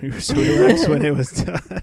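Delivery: high, giggling, laughing through the words.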